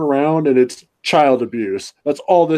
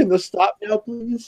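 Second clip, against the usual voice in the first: put-on pained cringing voice, higher; 7 semitones higher, 3 dB quieter than usual. Retelling watching a painfully slow scene: retelling a cringing plea. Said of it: "cringing in my chair, going".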